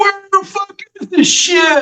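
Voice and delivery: very high-pitched, loud hollering shout. The speaker imitates young guys on a beach, imitating guys yelling. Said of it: "close enough to hear them yelling".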